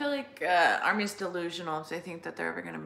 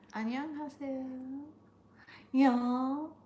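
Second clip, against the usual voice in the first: put-on higher, slow Texan accent. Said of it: "I said it in, like, a for-, in a Texan accent".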